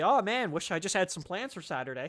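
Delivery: ordinary delivery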